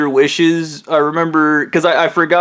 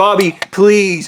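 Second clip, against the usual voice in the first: mock panicked voice, higher pitch; 3 semitones higher than usual. Retelling a man grabbing the phone, imitating someone freaking out. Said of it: "He's freaking out".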